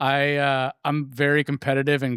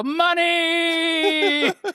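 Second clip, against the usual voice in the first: gleeful, very high yelled cry. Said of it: "I'd yell".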